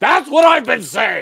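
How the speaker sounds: angry outburst, very high-pitched, shrill and very loud. Retelling a grandfather's joke punchline, ending in a mock-mad Indiana Jones voice. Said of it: "turned into Indiana Jones being mad at the end".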